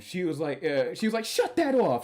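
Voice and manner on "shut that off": high-pitched, acted-out scolding voice. Retelling how a judge reacted to an ai lawyer video: imitating a judge scolding. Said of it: "the judge laid into him".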